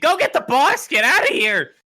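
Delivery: very high, very loud shrieking goblin yell. Voicing a goblin turned away from the hero: goblin screaming. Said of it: "he's just screaming".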